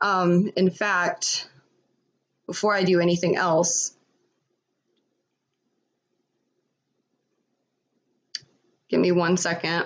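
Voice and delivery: very nervous, trembling voice. On a stream, before reading out messages, speaker is nervous and shaking. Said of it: "I'm shaking".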